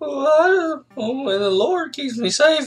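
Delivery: high-pitched, soft put-on voice. Describing an actor playing the tracker: imitating Vincent D'Onofrio's high-pitched soft tone. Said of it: "kind of this high-pitched, like, soft tone".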